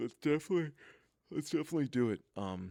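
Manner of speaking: very high words stretched and pushed through a yawn. Agreeing to the other speaker's plan, speaking while yawning. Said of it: "I'm yawning".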